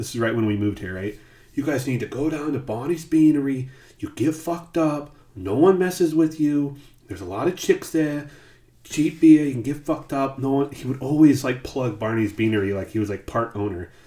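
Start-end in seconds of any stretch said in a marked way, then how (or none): 1.5-10.7 put-on heavy Brooklyn accent, laid on thick. Retelling how a man always plugged Barney's Beanery, in a thick Brooklyn accent. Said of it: "he had a thick, like, Brooklyn accent".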